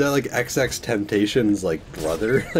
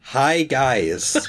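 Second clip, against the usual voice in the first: Canadian-accented voice; 3 semitones higher than usual. Two people trying out accents; one shows off a canadian accent. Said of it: "look at my Canadian accent".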